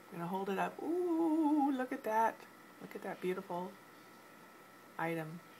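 playful, sing-song teasing build-up. Speaker showing the audience an item worn around the neck: teasing build-up. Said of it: "I'm teasing you here".

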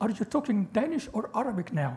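usual speaking voice

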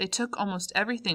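ordinary talk

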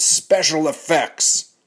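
high, slow, loud shout. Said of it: "a trailer that shouted".

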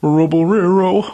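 terrible, bad cartoon dog voice. Speaker repeats a nickname in a terrible Scooby-Doo impression. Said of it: "It just sounds horrible".

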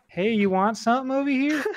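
high-pitched, seductive fake feminine voice. Imagining someone at the Grand Exchange luring in rich players, fake feminine voice. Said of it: "pretend to have that feminine voice".

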